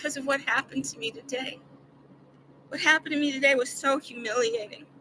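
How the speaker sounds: soft, rushed, near-tears voice. Speaker starts explaining what happened to them today, on the verge of crying. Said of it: "I'm gonna cry".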